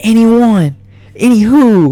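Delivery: high-pitched, top-of-the-lungs screaming outburst. Retelling what a fighter screamed at them: imitating someone screaming. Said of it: "he starts screaming at the top of his lungs".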